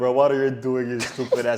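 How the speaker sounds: threatening, menacing tone. Retelling a call with a hacker: imitating own threatening tone. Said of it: "kind of, like, threatening him".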